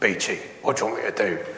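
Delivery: low, fast, gruff Welsh voice.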